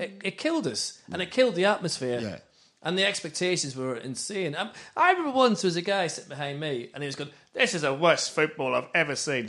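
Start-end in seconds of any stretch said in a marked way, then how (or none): 7.5-9.5 really bad, fake London accent. Retelling a man sitting behind him at the football, really bad london accent. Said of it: "that's a really bad London accent".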